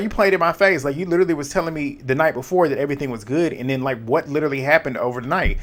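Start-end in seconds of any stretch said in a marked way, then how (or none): none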